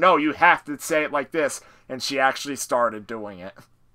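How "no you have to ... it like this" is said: ordinary talk, nothing marked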